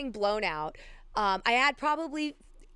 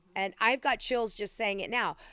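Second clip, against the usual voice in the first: ordinary talk, nothing marked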